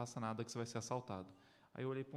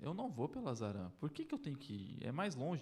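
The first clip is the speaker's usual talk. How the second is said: ordinary delivery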